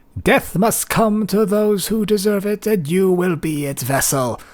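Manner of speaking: very muffled, indistinct, very high-pitched voice. Narrating a scene, voicing what the listeners hear: a very muffled, high-pitched voice. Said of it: "you just hear very muffled in a very high pitched voice".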